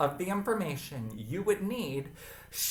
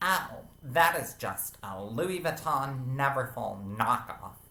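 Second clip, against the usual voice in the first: haughty, dismissive, rather snobby put-on voice; 5 semitones lower than usual. Voicing people who will call the speaker's bag a knockoff, mock-snobby voice. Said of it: "in a rather snobby voice".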